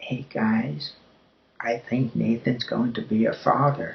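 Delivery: very quiet speech. Retelling what a woman said to two others through a door, retelling very quiet speech. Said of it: "say very quietly, as quietly as she could".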